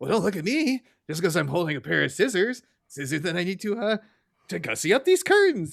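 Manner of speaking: put-on panic-stricken, panicky, flustered protesting tone. Retelling a cartoon scene where Marge is caught holding scissors: imitating Marge panicking. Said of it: "she's kinda, like, panicking".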